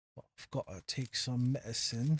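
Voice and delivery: obviously fake put-on British accent. Speaker back after talking to their dogs, addressing viewers, fake british accent. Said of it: "I'm doing a fake British accent".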